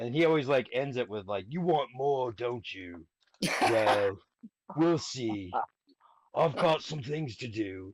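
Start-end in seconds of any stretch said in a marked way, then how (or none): 1.5-7.9 slow, dramatic, theatrical storyteller narrator voice. Imitating how the video guy always ends his videos, in a really dramatic voice. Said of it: "The guy with the really dramatic voice".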